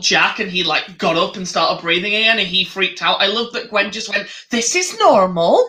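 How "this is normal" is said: bad, high-pitched, failed attempt at a Welsh accent. Retelling a scene where Jack starts breathing again, quoting Gwen; bad Welsh accent as Gwen. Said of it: "That was not a Welsh accent".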